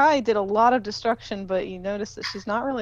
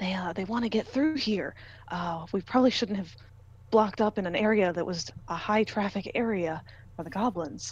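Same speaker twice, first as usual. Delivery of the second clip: half-whispered, hushed; 4 dB quieter than usual. Game narrator voicing a character who relays what the goblins want, half-whispering. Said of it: "he kind of whispers to you what they're saying".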